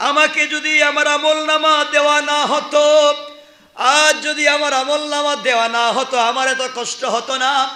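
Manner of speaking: high, loud screaming and crying wail.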